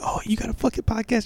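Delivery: angry put-on voice. Retelling how a friend called upset about the podcast: imitating Becky sounding mad. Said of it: "she called me all mad, like".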